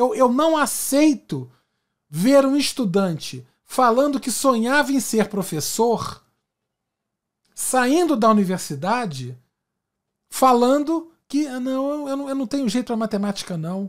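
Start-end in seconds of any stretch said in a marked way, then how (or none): 11.5-13.9 rushed, trembling, quavering, doubtful voice. Retelling a student leaving the university, imitating a trembling voice. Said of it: "com a voz trêmula".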